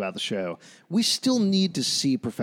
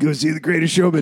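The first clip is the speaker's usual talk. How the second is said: promotional selling voice. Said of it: "I'm Hugh Jackman".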